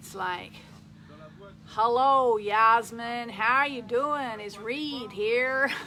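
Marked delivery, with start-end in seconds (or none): 1.7-5.7 tried-on, put-on American accent. Imitating a tall guy greeting Yasmin, Reed's put-on American accent. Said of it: "he's got this American accent, which dare I try and say it".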